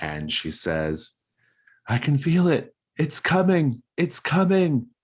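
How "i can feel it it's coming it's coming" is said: very high, loud screaming in pain. Voicing June, in labor on the dais, screaming in pain. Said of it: "she's screaming in pain".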